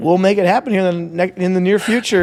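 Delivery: ordinary delivery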